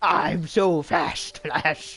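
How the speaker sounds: goofy, silly, very slow, drawn-out boastful voice. Mocking a TV villain who brags how fast he is: imitating Zoom's silly voice. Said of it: "he does actually have a silly voice like that".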